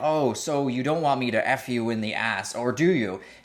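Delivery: mock scream, done jokingly. Speaker recounts a man screaming at a woman, retelling a joking scream. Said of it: "He's screaming things like".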